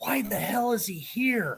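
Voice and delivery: hushed half-whisper under the breath. Retelling an encounter, quoting a man who half-whispers to Ben, retelling a half-whisper. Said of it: "he whispers to Ben".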